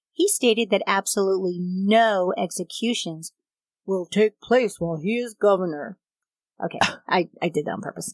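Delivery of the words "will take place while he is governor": put-on lofty, pompous, grandiose god-complex voice. Recounting a governor's statement on executions, put-on god-complex voice. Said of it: "so I needed to do the voice".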